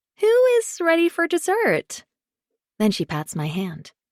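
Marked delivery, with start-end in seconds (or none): 0.2-2.0 bright, very high, cheery hostess-style announcing. Margot stands and announces as if to a room of guests, cheery announcing voice. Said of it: "announces in a cheery voice".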